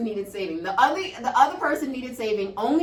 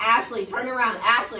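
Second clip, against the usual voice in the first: ordinary talk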